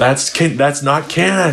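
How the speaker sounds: mock, high-pitched, half-yelled mild yell. Retelling a reaction to a scene in the show: retelling a yell. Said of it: "And I yell".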